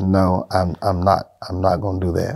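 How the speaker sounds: usual speaking voice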